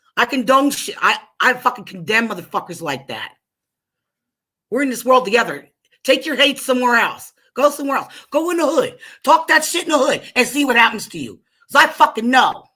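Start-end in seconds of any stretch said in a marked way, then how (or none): 6.0-12.5 fired-up, furious, heated angry rant. Speaking out to everybody listening, in a heated angry rant. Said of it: "I apologize, but I'm heated".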